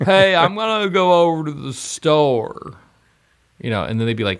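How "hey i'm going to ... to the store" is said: loud, slow, drawn-out put-on Southern drawl. Doing an impression of people from the South, imitated Southern US accent. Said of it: "our impression of them".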